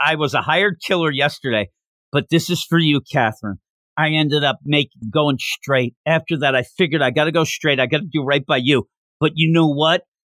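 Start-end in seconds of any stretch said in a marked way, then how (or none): none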